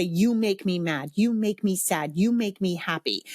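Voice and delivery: ordinary talk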